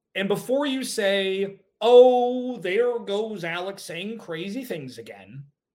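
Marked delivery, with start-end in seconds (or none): 1.8-5.5 put-on loud Southern grandma voice, drawn-out oh. Heading off a listener's objection about the Cardinals draft, in a Southern Grandma Gertrude voice. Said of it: "it sounded like a Southern grandma there".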